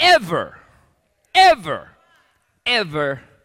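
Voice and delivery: heavy stress hammered on every single "ever". Reading a scripture passage aloud and repeating the line, with emphasis on ever. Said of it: "Emphasis on never".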